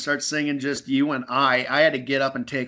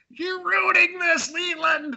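mock shrill, very high-pitched scream. Retelling a funeral scene where Sarah screams at Leland: imitating Sarah screaming. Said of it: "And Sarah's screaming, like".

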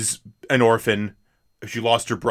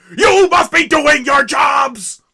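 put-on loud yelling, higher and louder; 7 dB louder than usual. Retelling a film scene, imitating John Hurt yelling. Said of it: "I am yelling really loudly".

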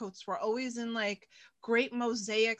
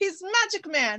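put-on higher-pitched Greek accent; 7 semitones higher, 4 dB louder than usual. Retelling Yaya's reaction to a workout video: imitating Yaya's Greek accent. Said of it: "in her Greek accent".

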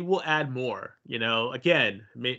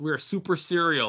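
ordinary talk, nothing marked

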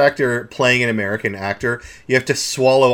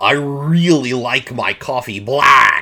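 exaggerated fake American accent with flattened A's. Mocking an accent learned at acting school: exaggerated fake American accent. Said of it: "they steamroll their A's as well".

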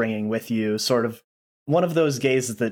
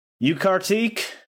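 loud, high-pitched shout; 9 semitones higher than usual. Narrating a woman who looks over to you and shouts out. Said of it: "shouts out".

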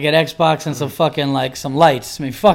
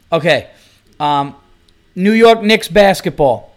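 ordinary delivery

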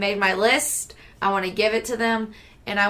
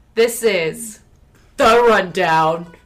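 loud, gruff announcer voice with gusto; 7 dB louder than usual. Announcing the rundown segment as the co-hosts asked, in a gruff voice. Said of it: "in the gruffy voice".

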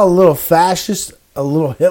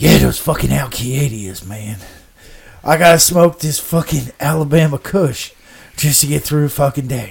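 mock dim-witted voice; 5 semitones lower, 3 dB quieter than usual. Quoting George Bush as he would say it: George Bush voice. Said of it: "As George Bush dummy would say".

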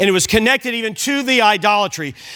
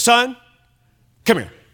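mock stern, ominous fatherly voice. Speaker retelling how his father called him over, imitating dad's ominous tone. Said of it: "Oh, no".

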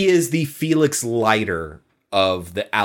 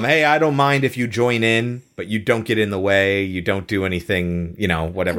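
plain

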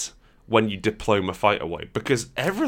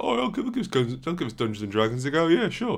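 put-on dorky, average spod voice; 5 semitones higher than usual. Complaining that rulebooks are complex, imitating an average spod off the street. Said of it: "the average sort of spod off the street who's like".

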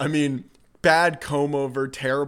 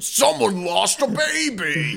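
put-on high, very slow monster voice, "baby" drawn out; 7 semitones higher than usual. Joking that the dubbed voice could be Sweetums from the Muppets: Sweetums voice. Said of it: "fucking Sweetums from the Muppets".

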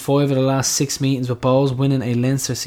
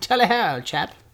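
mock old-fashioned English accent, higher pitch; 6 semitones higher than usual. Joking after praise of a narrator's old accent: put-on old-timey English accent. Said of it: "I love the old-timey English accent from the narrator there".

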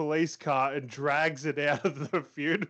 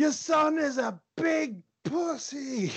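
shrill, very high, drawn-out yelling; 12 semitones higher than usual. Retelling a break-in where he started yelling at her: imitating someone yelling. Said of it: "started yelling at her".

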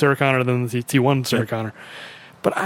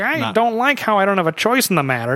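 mock high, whining valley-girl voice; 7 semitones higher than usual. Mocking a movie character's complaint as a valley girl: imitating Sarah Connor whining. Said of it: "would not be whining about".

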